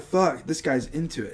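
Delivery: normal talking voice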